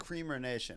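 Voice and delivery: ordinary talk, nothing marked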